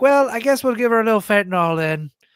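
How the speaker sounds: put-on leprechaun-style Irish accent, high and loud. Retelling what a doctor said, imitating a leprechaun-like Irish voice. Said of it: "talked like a leprechaun".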